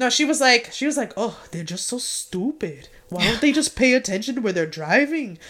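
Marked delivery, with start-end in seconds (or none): 1.2-5.4 unfazed, brushing-off mom voice. Reenacting a mother's reaction after being hit by a car: imitating mom. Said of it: "Could you reenact?".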